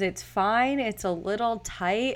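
normal talking voice

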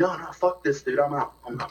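mock panicked, freaking-out outburst. Retelling how a friend at dinner reacted to the bill: imitating a friend freaking out. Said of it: "he starts, like, freaking out".

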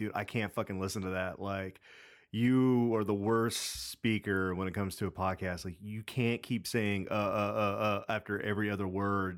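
ordinary talk

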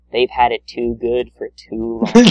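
tone turning dark, ominous and sinister. Retelling a cartoon character's line at the end of an episode, quieter voice. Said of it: "he says in a quieter voice".

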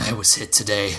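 ordinary delivery

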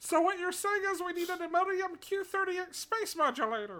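high cartoon alien voice. Co-host doing the rest of the show in a Marvin the Martian voice. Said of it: "There's a lot of Marvin the Martian in it".

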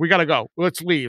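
ordinary delivery

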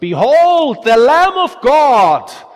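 loud, shrill, piercing high yell. Telling how a man strikes the floor with his staff: retelling a loud, piercing yell. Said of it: "yells with a loud and piercing voice".

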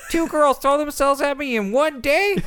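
put-on very high, very loud nerdy twelve-year-old voice. Voicing a character's inner monologue, which talks like a nerdy 12-year-old. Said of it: "talks like a 12-year-old nerd".

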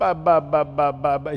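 put-on play-acted tearful little child's voice, crying. Father retelling handing off his daughter, imitating his crying daughter. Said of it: "she's crying".

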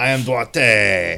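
slow, drawn-out, exaggerated mock French accent.

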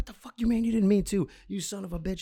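play-acted, shrill, very high-pitched screaming yell. Retelling confronting a man caught on camera, retelling screaming at him. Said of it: "I'm like screaming at him".

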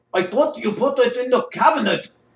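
put-on Polish accent. In an improv scene, answering a partner's question, in a Polish accent. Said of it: "picking it up in a Polish voice here".

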